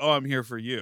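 playful, joking put-on tone. Speaker recounts what he jokingly said to her, retelling a joking line. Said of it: "he jokingly was like".

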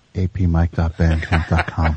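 slow, quiet, hushed half-whisper under the breath. Imagining the security guard speaking: imitating a quiet half-whisper. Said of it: "really quiet".

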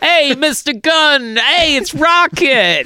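put-on old-timey gruff New York accent. Showing how the Rocket voice might have sounded: old-timey gruff New York Rocket voice. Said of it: "a little gruff New York".

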